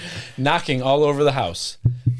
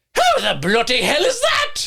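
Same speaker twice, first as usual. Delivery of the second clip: put-on very high, swooping British accent; 12 semitones higher than usual. Reading a quote from a report aloud, put-on British accent. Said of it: "Why did I give him an accent?".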